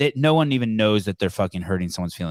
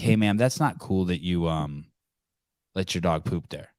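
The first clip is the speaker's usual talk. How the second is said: really calm, polite, reasonable tone; 3 semitones lower, 4 dB quieter than usual. Showing how they should have spoken to the lady instead of complaining, really calm. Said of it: "say it in a really calm way".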